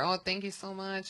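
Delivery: high, soft put-on Mexican accent.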